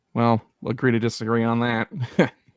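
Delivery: said with sarcasm. Replying in character that pay matters more than other things: sarcastic. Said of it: "I say sarcastically".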